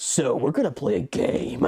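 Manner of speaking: slow intercom announcement voice, every word drawn out. Imagining a game announced over an intercom at a funeral: Jigsaw voice. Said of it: "a Jigsaw ass voice being like".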